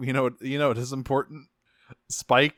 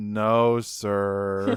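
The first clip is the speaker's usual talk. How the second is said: put-on dejected robot voice, lower; 3 semitones lower than usual. Retelling Grapple hanging his head: imitating Grapple dejected. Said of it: "hangs his head and goes".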